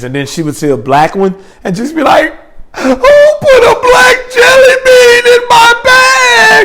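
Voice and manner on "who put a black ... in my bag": very high, very slow sobbing wail, "bag" drawn out. Retelling how she reacted over jelly beans, imitating someone crying. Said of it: "And start crying".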